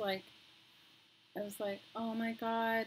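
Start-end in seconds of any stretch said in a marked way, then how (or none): 1.9-2.9 tearful, crying exclamation. Retelling crying in the doctor's office: imitating own past crying. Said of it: "and I was crying".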